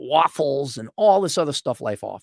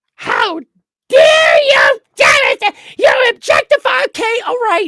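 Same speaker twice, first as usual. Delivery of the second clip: put-on apoplectic, outraged tirade, very high, very loud; 10 dB louder than usual. Imitating an outraged reaction to an idea: imitating an apoplectic outburst. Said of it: "Women will go apoplectic over that".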